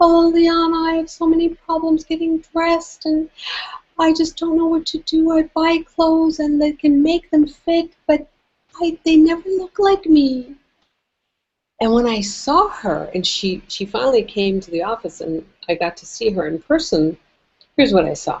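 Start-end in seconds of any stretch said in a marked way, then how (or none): 0.0-10.6 very high, wispy little voice. Imitating a client from San Francisco on the phone: wispy little voice. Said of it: "in this very wispy little voice".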